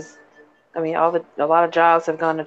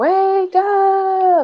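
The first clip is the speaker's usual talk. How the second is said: mock very high scream, rising and drawn out; 4 dB louder than usual. Retelling a film scene where Laurence Fishburne screams: imitating Laurence Fishburne screaming. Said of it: "Lawrence Fishburne screaming out of the top of his lungs".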